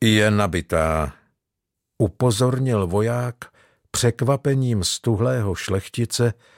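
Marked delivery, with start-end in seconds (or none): 0.0-1.1 cold, icy voice. A soldier warns a startled nobleman, cold voice. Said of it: "svým obvyklým studeným hlasem".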